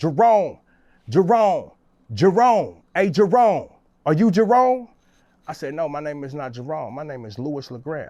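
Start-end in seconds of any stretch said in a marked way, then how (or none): 0.0-4.9 repeated urgent yells, loud and high. Retelling how a police officer walked in: imitating someone screaming. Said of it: "he walks in screaming".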